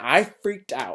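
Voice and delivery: plain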